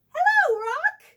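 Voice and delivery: very loud, very high, bright, cheery voice. Reading a story, the narrator voices a monkey calling out in a cheery voice. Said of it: "called out in a cheery voice".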